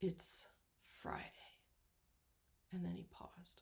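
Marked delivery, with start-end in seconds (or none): 0.0-1.2 hushed, quiet voice of great authority. Speaker retelling a preacher ending a long litany of wrongs, quiet with great authority. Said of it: "he said quietly with great authority".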